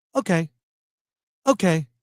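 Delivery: flat, expressionless, unreacting deadpan. Act out his sketch reply to an attractive woman breaking up with him, imitating a deadpan reply. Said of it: "he would sort of like deadpan just say".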